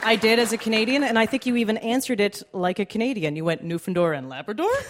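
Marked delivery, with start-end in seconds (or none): 3.6-4.7 question-like rising pitch at end of "Labrador". Recalling a quiz answer given the canadian way, rising pitch at end on labrador. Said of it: "it would always go up at the end".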